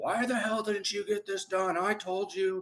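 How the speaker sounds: shrill, very high, furious yelling. Showing a boss checking on missed work: imitating an angry yelling boss. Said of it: "you're talking so fast and yelling".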